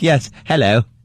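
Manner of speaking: put-on British accent. Joking about actors who turn out to be British: imitating a British accent. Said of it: "he's got this British accent".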